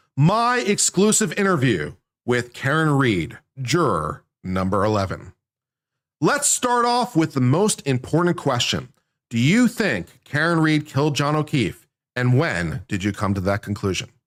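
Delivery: grave, swooping dramatic reading voice, full gravitas. Host reading an interview aloud to give it gravitas: dramatic reading voice. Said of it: "I'm going to do this in best dramatic reading voice".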